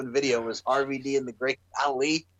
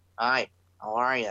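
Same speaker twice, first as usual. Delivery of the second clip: lifeless, bored, slow, dull delivery; 3 semitones lower than usual. Acting out a wrestler changed after a knockout: acting out a boring person. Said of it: "he's friggin' changed and he's all boring".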